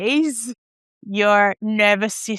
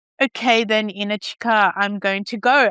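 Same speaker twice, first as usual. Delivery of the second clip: usual speaking voice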